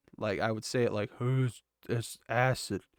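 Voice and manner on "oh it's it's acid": very slow, drawn-out mumbling. Retelling how they could not say the word during an acid trip: mumbling. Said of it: "I was just mumbling".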